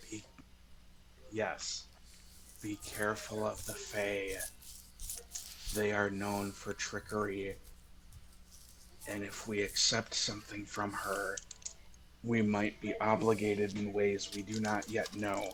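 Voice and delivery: low, muttered half-whisper. Half-whisper warns the group about the Fae, muttering in a low half-whisper. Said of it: "mutters very quietly to the group, like so a lower whisper than normal".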